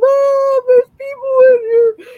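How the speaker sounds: play-acted very high, very loud, frightened pleading sobs. Retelling waking the parents at night as a frightened kid: imitating crying as a child. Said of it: "And I'm just like crying".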